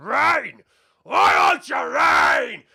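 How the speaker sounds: loud ogre voice, shouting.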